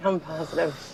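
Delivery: soft, drowsy mumble, sounding about to fall asleep. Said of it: "You sound like you're about to fall asleep".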